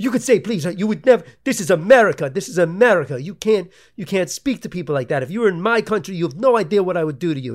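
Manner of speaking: man yelling. Retelling a man's reaction to being asked to wear a mask, imitating him yelling. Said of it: "And he's fucking yelling at me".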